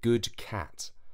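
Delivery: plain reading voice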